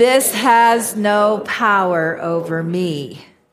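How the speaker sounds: very slow, unyielding, defiant delivery. Leading an affirmation exercise as if the Goblin King stood before you: defiant, as if facing an enemy. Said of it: "say it like the Goblin King is standing in front of you".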